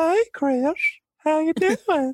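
very high animated-sitcom character voice. Recalling joking with a brother named Chris, greeting him in a Family Guy character voice. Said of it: "That's the voice that I can't crack in Family Guy".

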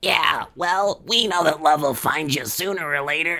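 same troll voice used earlier. Retelling a scene, voicing one of the cockroaches answering her: voice like the earlier troll. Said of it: "I kind of sound like the troll from before".

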